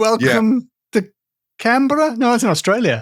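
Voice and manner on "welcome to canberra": deliberately bad, wrong put-on New Zealand accent. Showing how not to do someone's accent: deliberately bad new zealand accent. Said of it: "doing people's accents wrong".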